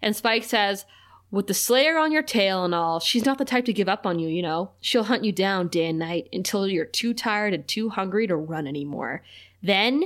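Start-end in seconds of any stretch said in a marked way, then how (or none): none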